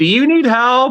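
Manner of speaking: very high, loud, shouted call. Retelling how someone called out from his table: imitating someone yelling. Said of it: "I hear him yell from his table".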